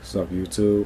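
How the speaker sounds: dead-level, flat drone with no tune. Mocking a generic YouTuber's intro, said in a flat monotone. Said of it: "talking on monotone".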